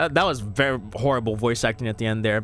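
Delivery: ordinary delivery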